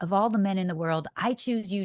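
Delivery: plain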